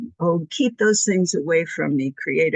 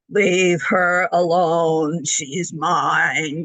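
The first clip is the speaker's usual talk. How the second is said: creepy, very slow scary voice, "mine" stretched. Retelling what a voice said through a hypnotized patient, in a scary voice. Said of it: "this is a scary voice".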